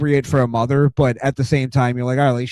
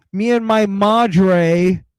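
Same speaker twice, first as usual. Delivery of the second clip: high, slow valley-girl voice, badly pronounced Spanish, drawled madre; 6 semitones higher than usual. Mocking a wrestler's attempt at speaking Spanish: imitating Nikki Bella's bad Spanish.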